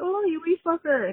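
clumsy, really bad put-on Irish accent, high-pitched. Telling listeners what the speaker keeps saying around the house, in a bad irish accent. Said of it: "trying to do my best Irish accent that's really bad".

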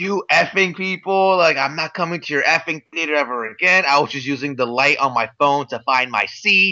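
put-on angry tone. Retelling the voicemail a kicked-out theater customer left, imitating an angry caller. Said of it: "she left them an angry voice".

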